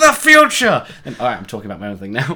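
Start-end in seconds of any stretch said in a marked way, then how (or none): 0.0-0.9 very high, shrill, booming, very loud yell. Retelling how the other speaker yelled at them: imitating someone yelling. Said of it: "you just yelled at me".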